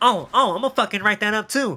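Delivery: mock sassy, snippy voice. Retelling a classroom clash, imitating Miss Darnell giving attitude. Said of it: "she gives me an attitude".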